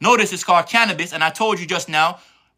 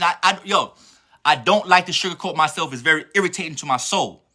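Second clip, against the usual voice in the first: normal talking voice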